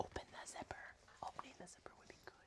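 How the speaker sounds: soft whisper under the breath. Talking through fixing a clip and opening a zipper, whispering. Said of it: "I'm whispering about it".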